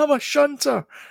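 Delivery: put-on very high, loud shriek. Retelling how James drove by and shouted at them: imitating James screaming. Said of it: "he screams at them".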